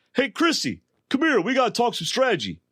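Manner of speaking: put-on, very high, loud, swooping holler. Retelling a call made so everybody in the camp can hear: imitating Alan calling loudly. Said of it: "loudly, so everybody in the camp can hear".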